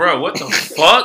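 acted, mock-snapping angry outburst. Speaker retells a stranger's provocation, acting out snapping back at him. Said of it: "I immediately start snapping".

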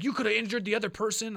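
loud, high-pitched angry yelling. Retelling how the boss reacted to a disaster at work: imitating boss yelling. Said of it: "this time he yelled at me".

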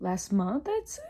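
breaking, cracked voice mid-phrase. Chatting casually about following pages on Instagram, with a voice crack. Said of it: "Oh, voice crack".

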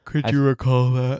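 yawning while talking. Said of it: "I'm sorry, I'm yawning".

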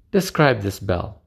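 ordinary delivery

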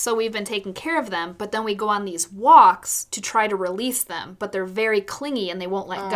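ordinary talk, nothing marked

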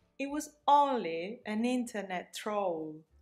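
soft, polished, proper posh English accent. Practicing pronunciation, the speaker repeats a sentence in a very good English accent. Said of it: "that sounds like a very good English accent".

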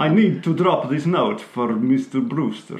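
put-on Eastern European accent. Retelling a man claiming to drop off a note, in a faux Eastern European accent. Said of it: "he says it in a faux Eastern European accent".

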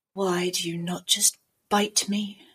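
deep, slow woman's voice, exasperated and fed up. Showing the frustrated assassin character Mercy's catchphrase: deep-voiced woman character. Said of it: "a woman with quite a deep voice".

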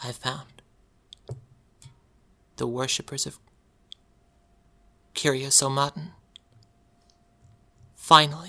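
quiet, soft, hushed voice. A game master voices a character the players overhear, in a quiet voice. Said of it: "You hear Celia quietly say".

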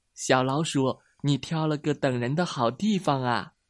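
plain reading voice

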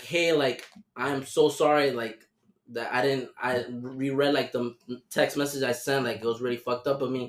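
usual speaking voice

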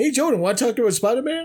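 mocking, high-pitched voice.

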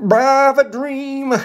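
mock sermon-style oratory delivery. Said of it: "Shut up, M L K".

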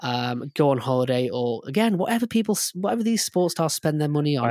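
ordinary talk

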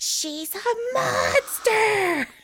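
mock, very high-pitched shout. Speaker retells a girl yelling at a man, retelling a yell. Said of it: "And she just yelled at him".

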